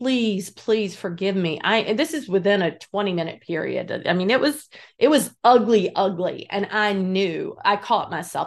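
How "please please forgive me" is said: acted-out crying, tearful pleading. Retelling kneeling and hugging his legs, reenacting a tearful plea. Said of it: "we both were crying".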